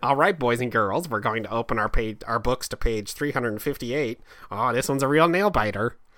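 put-on teacher voice, Wisconsin accent. Joking about looking like a teacher with a mustache, geography teacher from Wisconsin voice. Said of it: "You look and sound like a geography teacher from Wisconsin".

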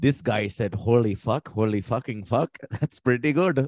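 bad, clumsy put-on Indian accent. Acting out what others would say about a guy, in a bad Indian accent. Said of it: "you have a really bad Indian accent".

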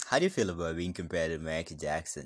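usual speaking voice

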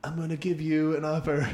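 bad put-on mobster voice. Asked to do Pesci, attempting an impression: botched Pesci impression. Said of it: "do Pesci".

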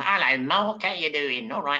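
friendly, casual little voice. Describing an old movie actor he sees walking his dog, imitating a movie actor's voice. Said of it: "he talks like this".

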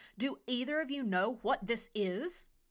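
loud shouted yell. Narrator voicing the physician calling out from beneath a nearby table, yelling. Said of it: "the physician yelled".

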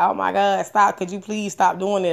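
put-on tearful crying voice. Retelling begging a partner to stop hitting, retelling crying plea. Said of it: "I'm crying and shit".

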